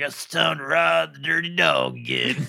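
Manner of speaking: put-on raspy, gravelly voice of an older person. Describing what older smokers have been heard saying: gravelly 65-year-old smoker voice. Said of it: "smoking 65-year-olds just like with a gravelly voice being like".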